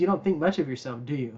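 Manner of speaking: mock sarcastic delivery. Retelling a line from an old movie, imitating a sarcastic remark. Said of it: "Being sarcastic".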